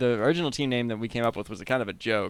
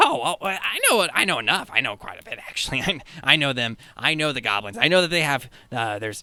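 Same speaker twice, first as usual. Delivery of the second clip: giddy goblin voice, much higher pitch; 2 semitones higher, 3 dB louder than usual. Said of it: "and [name] is the only one working the cash register, and he's just like sitting on the stool, rocking back and forth, his like grin ear to ear. And he's just humming a little song, and like you see /".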